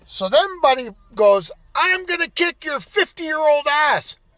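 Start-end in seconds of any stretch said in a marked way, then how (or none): 1.7-4.1 put-on, furious, high-pitched angry shouted yell. Retelling what an angry driver yelled from his car: imitating an angry man yelling. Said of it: "So he's yelling at me".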